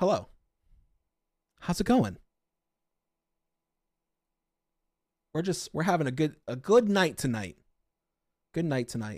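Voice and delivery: acted, sugary, fake cheery, passive-aggressive tone. Acting out a retail worker's comeback: mock passive-aggressive greeting. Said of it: "Passive aggressive".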